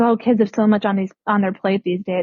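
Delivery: plain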